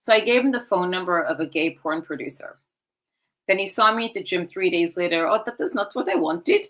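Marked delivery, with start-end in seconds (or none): 5.3-6.7 put-on, mock Austrian accent. Retelling what a man at the gym said, imitating his austrian accent. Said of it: "with his didactic accent".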